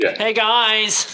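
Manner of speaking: surprisingly very high, loud orc voice. Player introducing their big, gorgeous orc character to the group, in orc character voice. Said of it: "My guy's a big, gorgeous orc, but he's like".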